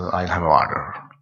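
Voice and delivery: put-on American accent. Showing how Americans say the word water: imitating American accent. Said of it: "If you're American".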